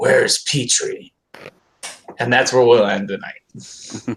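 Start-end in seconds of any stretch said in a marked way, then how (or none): 0.0-1.1 rough, gravelly character voice. A game master voices a dark figure emerging from behind a tree, gravelly voice. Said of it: "in a gravelly voice say".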